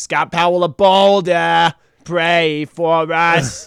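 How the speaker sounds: put-on Long Island accent. Retelling a priest listing names down the halls: thick Long Island accent. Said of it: "he had this thick accent".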